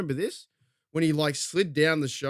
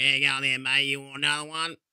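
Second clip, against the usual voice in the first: put-on Australian accent. Telling friends to visit a pub in the sticks, voicing a pub local in an Australian accent. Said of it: "Speak like that".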